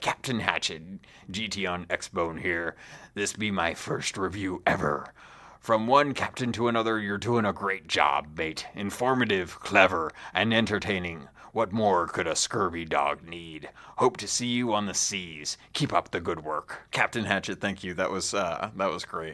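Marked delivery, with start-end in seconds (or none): 0.0-17.6 full pirate character voice. Reading a five-star review aloud: pirate voice. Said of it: "I gotta read this like a pirate".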